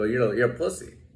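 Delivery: muttered under the breath. Retelling an insult said to a guard while collecting belongings: imitating saying it under his breath. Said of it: "as I'm taking my shit under my breath".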